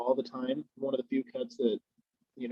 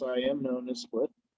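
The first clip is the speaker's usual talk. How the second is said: ordinary talk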